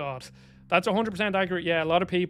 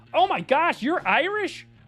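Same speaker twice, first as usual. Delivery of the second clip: bad put-on American accent, pitched very high; 11 semitones higher than usual. Imitating Americans reacting to an Irish person, bad American accent. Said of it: "I'm gonna do a bad American accent here".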